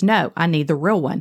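ordinary talk

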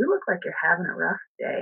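calmest, quiet, softly spoken delivery. Retelling what they said to a man who stared at them, retelling saying it calmly, monotone. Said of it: "very quietly, in my calmest, most monotone voice".

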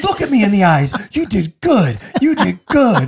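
put-on earnest, high, sing-song little-kid voice. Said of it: "he goes".

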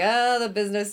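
ordinary talk

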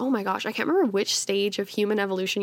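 ordinary talk, nothing marked

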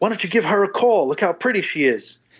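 put-on high, half-yelled callout. Recalling standing at a bar, the speaker acts out a man screaming at him, imitating a man screaming. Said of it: "he's screaming".

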